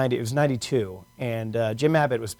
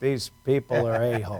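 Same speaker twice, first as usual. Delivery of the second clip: mock muttering under breath, aside. Speaker retells a grandfather waving at people, imitating a mutter under breath. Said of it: "under his breath he goes".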